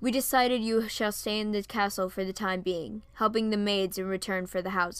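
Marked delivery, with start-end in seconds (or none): none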